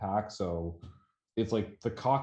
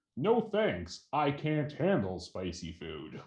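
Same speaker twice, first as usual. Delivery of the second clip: put-on, high-pitched, swooping voice; 5 semitones higher than usual.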